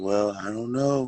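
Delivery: mock guilt-tripping tone. Retelling how church people spoke: imitating a manipulative tone. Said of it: "a weird mali-, manipulative".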